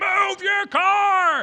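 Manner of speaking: very loud, very high furious yell, "car" drawn out. Retelling impatience at a car blocking the gas pump: imitating own angry shout. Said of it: "I'm mad about that".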